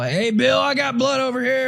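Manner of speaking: very high, mock hollering shout. Retelling how a man tracking a deer called out: imitating someone yelling. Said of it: "he'll yell".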